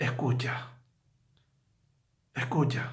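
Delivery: hushed, soft, near-whispered pleading.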